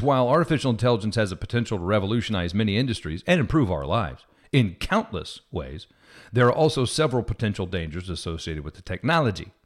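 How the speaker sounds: ordinary talk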